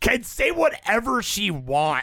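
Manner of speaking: high, catty, bitchy delivery. Rereading a gossip item after being asked for more attitude: bitchy. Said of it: "I'll say it more bitchily".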